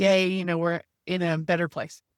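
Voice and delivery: plain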